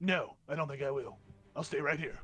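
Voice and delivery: dragon character voice. Voicing a dragon who refuses to move: voicing a dragon. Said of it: "this dragon looks at you and says".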